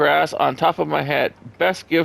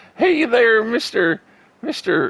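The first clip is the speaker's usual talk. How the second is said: put-on whiny southern accent, pitched up; 7 semitones higher than usual. After admitting a weak southern accent, the speaker tries Mister Haney from Green Acres. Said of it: "trying to do Mister Haney on Green Acres though, because his southern accent".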